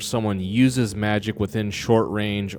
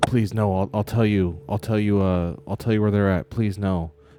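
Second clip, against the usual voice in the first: repeated, distressed begging tone. A game master plays a surrounded man begging the party, distressed pleading. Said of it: "he looks clearly distressed".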